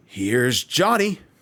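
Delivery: very loud, high horror-movie-style yell. Asked by the co-host for a Here's Johnny line: Jack Torrance Here's Johnny. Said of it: "give us your best Here's Johnny".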